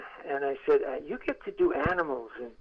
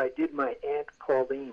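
ordinary talk, nothing marked

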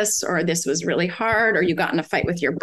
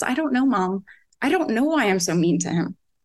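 mock crying, tearful, slower. A mother retells her son breaking down when she asked what was wrong: imitating someone crying. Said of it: "he just broke down crying".

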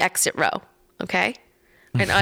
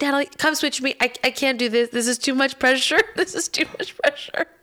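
high, mild put-on half-yell; 6 semitones higher than usual. Recounting a flight, the speaker quotes a woman calling across the plane: imitating someone yelling. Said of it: "now yelling across the whole plane".

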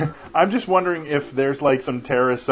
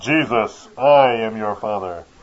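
slow reading cadence, every word drawn out; 5 semitones lower than usual. Showing the only Jesus voice they can do: James Earl Jones impression. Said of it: "the only Jesus I can ... really do is when, uh, James Earl Jones read from the Bible".

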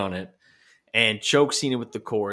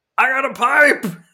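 thrilled, ecstatic shriek, very high and very loud; 14 semitones higher, 9 dB louder than usual. Retelling the moment John Cena gets a pipe, do it imitating John Cena yelling. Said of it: "John Cena yells".

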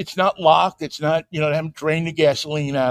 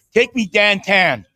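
put-on Pittsburgh accent, louder; 4 semitones higher, 3 dB louder than usual. Show how a driver would talk to a car's voice system in Pittsburgh, in a put-on Pittsburgh accent. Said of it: "they have to get the accent".

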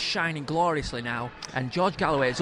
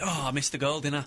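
usual speaking voice

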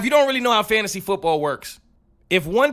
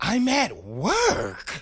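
soft, swooping, mock condescending talking-down tone; 5 dB quieter than usual. Retelling what a guy said when called about the password: mock-condescending tone. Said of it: "In the most condescending tone".

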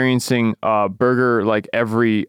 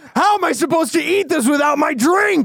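high-pitched, outraged, irate griping. Mocking angry service customers: imitating an angry customer. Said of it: "the angriest people".

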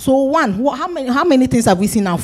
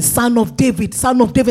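usual speaking voice

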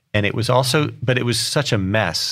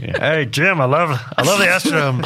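imitated loud, booming voice, raised pitch; 6 semitones higher, 3 dB louder than usual. Retelling a phone call from a pleased man to the person who sold it, booming Ed Wolf voice. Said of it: "his booming voice over the phone".

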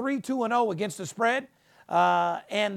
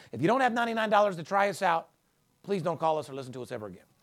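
completely earnest, dead serious tone, no joking; 3 semitones lower than usual. A host pitches a paid promotion to listeners: dead serious. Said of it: "You said that so seriously".

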